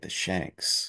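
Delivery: hushed whisper on the word "shanks". Talking golf, saying a bad golf word: whispered the shanks. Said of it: "I'm going to whisper it because it's like one of the bad golf words".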